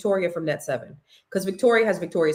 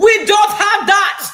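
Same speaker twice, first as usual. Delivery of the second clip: bad fake Jamaican accent, very loud and high; 13 semitones higher, 10 dB louder than usual. Complaining about the area's service, mimicking a restaurant in a bad fake jamaican accent. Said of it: "not not not not the right accent".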